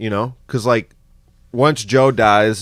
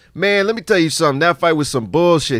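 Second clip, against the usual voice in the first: higher streetwise man's voice; 5 semitones higher than usual. Retelling what a homeless man said about the fight: imitating his voice. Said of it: "this is how he sounded".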